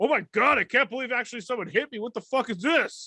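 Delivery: very high-pitched, angry, furious ranting outburst. Imitating a football player who gets up angry after being hit: imitating an angry Tom Brady. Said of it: "He's all angry".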